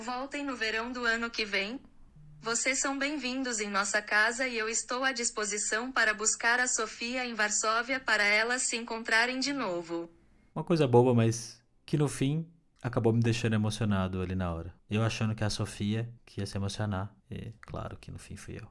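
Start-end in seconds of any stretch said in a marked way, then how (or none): 0.0-10.1 very high robotic text-to-speech phone voice. Retelling what a man's phone said aloud to them, robotic phone voice. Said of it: "diz em uma voz robótica".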